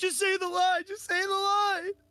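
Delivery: very high-pitched, panicky, urgent voice. Retelling a scene where the little one panics during a countdown: imitating someone panicking. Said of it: "he starts like panicking".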